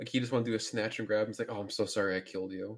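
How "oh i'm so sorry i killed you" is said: mock gentle, peaceful, slow, mild apologetic tone. Retelling a movie scene played for laughs: imitating a character being peaceful, apologetic. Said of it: "he's trying to be this peaceful".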